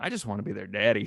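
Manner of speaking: put-on soft laid-back voice. Retelling what a guy in the Easter pageant told the group: imitating a laid-back soft voice. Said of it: "he had this real laid back, soft voice".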